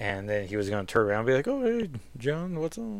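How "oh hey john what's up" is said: horribly done, pitched-up, casual voice. Imagining how a greeting would go, in Nathaniel voice impression. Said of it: "that's a horrible impression of him".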